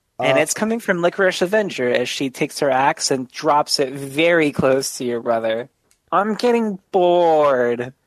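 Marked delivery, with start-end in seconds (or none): 6.1-7.9 whiny character voice, slower. A storyteller voices Licorice Avenger as she drops her axe, Licorice Avenger whiny voice. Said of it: "You hear a really whiny voice that's like".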